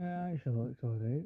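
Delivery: flat, unimpressed, unenthusiastic delivery. Answering a question about the new setup: unenthusiastic. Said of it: "Don't sound so enthusiastic".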